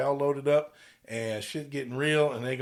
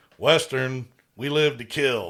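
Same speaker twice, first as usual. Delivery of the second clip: put-on stern, mean phone voice, louder; 6 dB louder than usual. Retelling a movie scene, answering a phone call: imitating Alex's stern, mean voice. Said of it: "answers the phone in a stern and mean voice".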